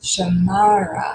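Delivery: Shamara with stress on second syllable -ma-. Explaining syllables in names, saying Shamara with stress on second syllable of Shamara. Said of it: "the second one in this case is accented".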